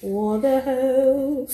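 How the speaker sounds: slow, stretched-out, silly put-on voice.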